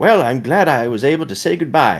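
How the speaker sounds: put-on high, dying old man voice on deathbed. Imitating an old person saying farewell: imitating a dying old person. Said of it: "he's like".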